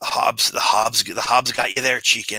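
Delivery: taunting corpse voice through a dry chuckle. The speaker voices a corpse that laughs and then speaks: corpse voice after dry laugh. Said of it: "the corpse laughs laughs his dry laugh and says".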